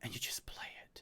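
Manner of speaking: soft, unvoiced whisper.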